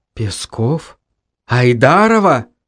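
dazed, stunned, low mumble. The narrator hears startling news from the guys and responds, mumbling in shock. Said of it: "Промямлил я ошарашенно".

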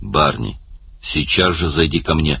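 plain

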